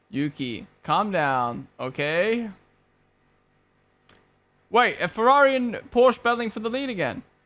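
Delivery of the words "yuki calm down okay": very slow, calm, condescending tone. Quoting the team engineer talking to the racing driver, mock-condescending tone. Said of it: "just the way you said it was so like".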